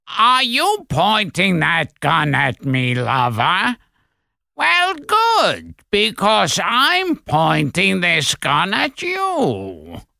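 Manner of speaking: high, slow, deliberate, with you stretched long. Showing an Everett Sloane imitation from The Lady from Shanghai. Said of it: "I can do my Everett Sloan imitation".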